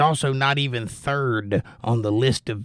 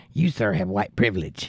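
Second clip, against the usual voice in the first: mock lisping voice, lower; 3 semitones lower than usual. Retelling what someone once said to the speaker: imitating someone's lisp. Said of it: "they had to lisp like that".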